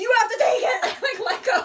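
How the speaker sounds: acted panic, high and loud. Retelling holding a fire engine's wheel through a turn: retelling own panicked plea. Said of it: "I am freaking out".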